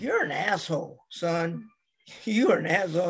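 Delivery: speech mixed with laughter. Retelling messing around and being held off: imitating someone laughing while talking. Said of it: "he's just laughing like".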